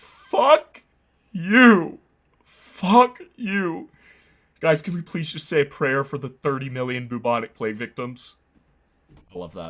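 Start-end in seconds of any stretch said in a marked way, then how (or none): 0.0-8.3 mock emotional crying, loud, slow and tearful. Retelling a scene where Glep gets really emotional: imitating Glep crying. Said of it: "really emotional and starts crying".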